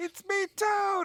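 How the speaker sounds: very high, squeaky voice. Saying they have no Toad impression, the speaker tries one anyway: squeaky Toad voice. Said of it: "Toad's just very squeaky voiced".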